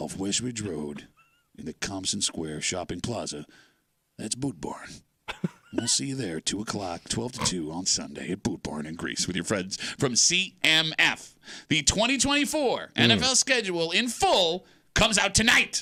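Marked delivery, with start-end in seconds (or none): 0.0-10.2 very deep, low cowboy commercial read. Host reads an on-air ad for the new Boot Barn store: Boot Barn voice. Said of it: "I'm doing my Boot Barn voice".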